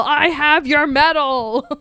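put-on very slow yell, every word stretched out. Retelling what a character yelled: imitating a character yelling. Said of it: "All he did was yell".

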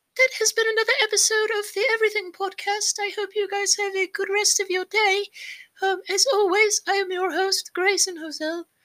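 very high character voice. Podcast host signing off the episode, in a Dobby impression. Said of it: "That was the Dobby impression".

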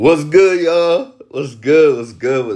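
way too excited voice. Greeting everyone at the start: way too excited greeting. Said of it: "I sounded way too fucking excited".

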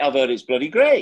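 put-on Oldham accent. Retelling what a man said, quoting him in an Oldham accent. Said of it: "I don't know if that's a very good Oldham accent".

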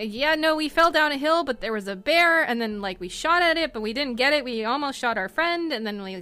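rambling speech, high and loud. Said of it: "as you try to explain".

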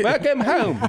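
very high-pitched, loud, put-on British accent. Asked to do an accent, greeting someone: put-on british accent. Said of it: "that British accent".

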